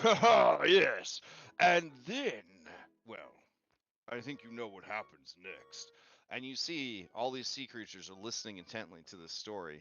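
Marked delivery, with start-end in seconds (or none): 0.0-5.9 loud, hearty, boisterous voice. Voicing a character telling a story to sea creatures: boisterous voice. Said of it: "a boisterous, uh, voice say".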